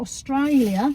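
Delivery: bad, fake, put-on Australian accent. Listing places while checking mug prices, terrible put-on australian accent on 'australia'. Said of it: "That's a terrible Australian accent".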